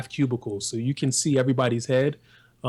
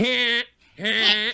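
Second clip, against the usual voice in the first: extremely nasal voice, higher pitch; 10 semitones higher than usual. Showing how a texted "huh" sounds when said aloud: extremely nasal voice. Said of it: "it's all nasal".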